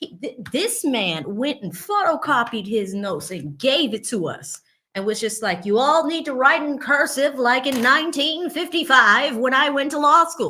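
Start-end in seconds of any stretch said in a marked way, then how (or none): 5.6-10.5 put-on raised old-school Boston accent. Imitating the torts class teacher addressing his students, old-school Boston Harvard voice. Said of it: "he had that old school Boston, Harvard voice".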